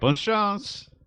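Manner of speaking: very high, loud yell in French. Voicing a rower who calls out while rowing away: yelling in French. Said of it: "he'll yell out to you".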